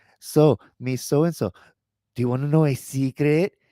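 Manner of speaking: loud, high-pitched female voice. Retelling a woman's story of a kid's question, imitating a woman's voice. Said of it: "in her voice".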